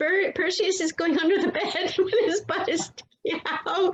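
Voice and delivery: suppressing giggles, laughter breaking through the words. Host reacting to a pet crawling under the bed, holding back laughter. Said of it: "I'm trying not to laugh".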